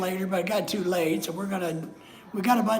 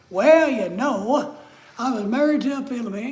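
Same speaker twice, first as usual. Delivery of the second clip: American South accent with raised voice; 4 semitones higher, 5 dB louder than usual. Not having a Texas accent, the speaker does a Southern US accent. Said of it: "I just have a southern one, so I'll do that one".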